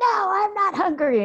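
put-on very high, loud, drawn-out child's scream. Retelling refusing to eat a banana: imitating a child screaming. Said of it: "scream at me".

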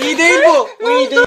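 panicked, begging voice, loud and high.

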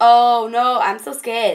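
mock-scared. Recommending a film to viewers, retelling own reaction to it, mock-scared. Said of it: "I wasn't even scared. I was like".

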